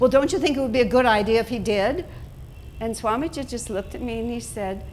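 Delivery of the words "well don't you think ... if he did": raised, pestering, nagging tone. Recounting what they once said to him before Swamiji, retelling a nagging-wife tone. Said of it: "nagging wife tone of voice".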